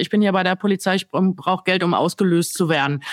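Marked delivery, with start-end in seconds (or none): none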